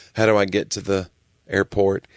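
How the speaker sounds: ordinary talk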